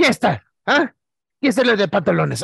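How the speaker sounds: play-acted, high, harsh scolding tone in Spanish. Imitating mom asking about ripped jeans: imitating mom's harsh scolding tone. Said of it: "my grandma's, like, tone".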